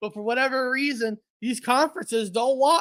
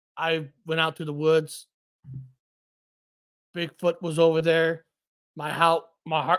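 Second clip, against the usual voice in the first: very deep, low, dead-level flat monotone drone; 7 semitones lower than usual. Speaker demonstrates how some people talk, in a monotone delivery. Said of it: "kind of got that monotone".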